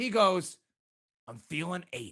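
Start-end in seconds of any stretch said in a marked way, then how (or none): 1.3-2.1 mock deep, very low, hushed, angst-filled voice. Speaker retells a man's reply in a story, imitating strong angst. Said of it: "with a strong angst in his voice".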